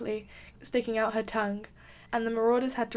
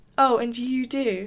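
quick, sharp, louder; 4 dB louder than usual. James retorts to Sirius's teasing, shooting back. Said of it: "James shot back, frowning".

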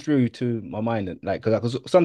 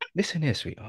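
very soft, hushed put-on London accent; 3 semitones higher, 10 dB quieter than usual. Showing how an actor who used to sound posh now talks, speaking like a Londoner. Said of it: "He speaks like a Londoner".

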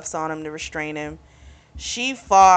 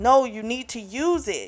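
acted-out shouting; 6 semitones higher than usual. Retelling a story, acting out her yelling at them, retelling her yell. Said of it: "she's trying to yell at them like".

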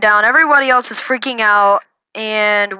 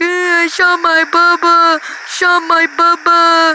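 mock crying, much higher and slower; 6 semitones higher than usual. Retelling how his little brother reacted after he was shot, imitating crying. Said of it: "My little brother was crying, like".

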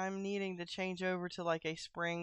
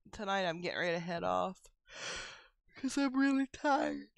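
speaking through a yawn. Wrapping up for the night, yawning while talking. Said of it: "And I was yawning".

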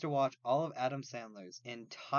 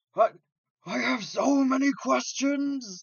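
very loud, very high, slow, drawn-out yell; 13 semitones higher, 10 dB louder than usual. Comparing own reaction to a cartoon scene: Cell from DBZ Abridged voice. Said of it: "Cell in D B Z Abridged".

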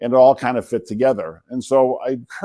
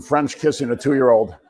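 ordinary talk

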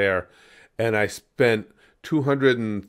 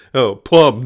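put-on pompous dog voice, louder; 9 dB louder than usual. Mocking a cartoon character just heard: imitating Brian, pompous. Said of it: "he's so freaking pompous".

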